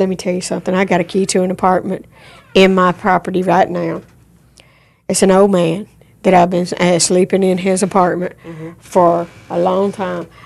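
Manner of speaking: ordinary talk, nothing marked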